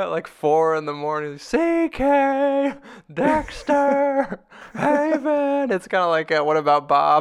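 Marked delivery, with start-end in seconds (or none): 1.4-5.7 mock drunken yell, much higher, slower. Retelling a drunk man yelling a name at the door at 4 a.m., retelling a drunk man's yell. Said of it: "He just keeps yelling".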